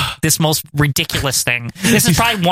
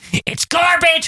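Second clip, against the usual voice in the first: mock, very high, scoffing, ranting voice; 12 semitones higher than usual. Retelling a wrestler's rant line: imitating Piper ranting. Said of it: "this line right here where he's like".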